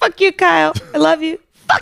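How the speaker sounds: put-on drunk cartoon voice. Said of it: "Stead on South Park when he was drunk".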